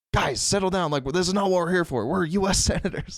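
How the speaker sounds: high-pitched yell, sounding off to the side. Retelling a senator stepping in off camera: imitating Bernie Sanders yelling. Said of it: "off camera yelling".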